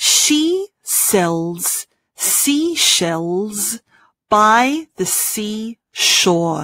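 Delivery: very slow, careful, deliberate delivery. Practicing the sh and s sounds in a sentence: slowly. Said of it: "Let's do it slowly first".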